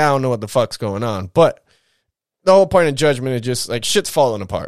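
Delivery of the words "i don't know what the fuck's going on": normal talking voice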